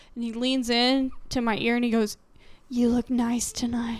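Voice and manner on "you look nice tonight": really creepy, unsettling delivery. A man grabbed the speaker's arm and leaned in; imitating a man's creepy remark. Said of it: "he said it really creepily too".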